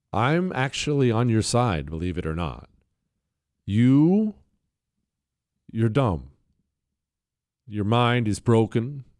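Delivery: fake gentle, soothing, loving voice. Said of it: "that's my loving voice right there".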